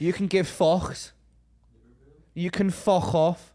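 Liverpool Scouse accent. Discussing regional accents, the speaker demonstrates a Scouse accent.

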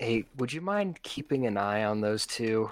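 hushed whisper, said to the side. A player leans over to a companion and speaks into his ear, whispering. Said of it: "like whisper in his ear".

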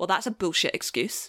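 acted deadpan mockery. Imagining how a work contact would answer a flimsy excuse, a mock-deadpan piss-take. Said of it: "it would be like deadpan taking the piss".

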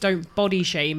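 ordinary talk

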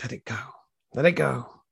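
put-on quiet mutter under the breath. Retelling what they used to tell themselves: retelling muttering under breath. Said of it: "muttering just under my breath".

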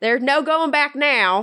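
put-on Southern accent drifting British. In a roleplay game, a player voices her character at a turning point: Southern accent turning British. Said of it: "She kind of got British there too, so she was a Southern Brit".

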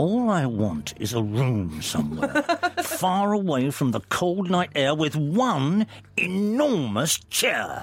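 menacing through clenched teeth. Demonstrating musical lyrics said as a threat, through clenched teeth, threatening. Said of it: "if you say them through clenched teeth".

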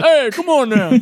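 put-on old Italian guy voice. Imagining how a character will talk once he learns to speak: old Italian guy voice. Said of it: "He'll go from, "Hi," to".

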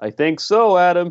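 put-on American accent. Asked again about his relegation call, speaker answers in a fake American accent. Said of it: "He's persisting with this till the end".

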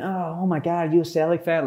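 silly put-on American accent. Speaker retells tapping a celtic fan on the shoulder; stupid american accent. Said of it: "in a stupid American accent".

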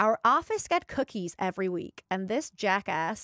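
put-on American accent. Speaker reads out a friend's sister-in-law's message, in an american accent. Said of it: "do you want me to do it in American voice?".

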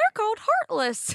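way up high, tiny cartoon mouse voice. Retelling a game scene where Mickey corrects Aqua: Mickey voice. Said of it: "And Mickey's like".

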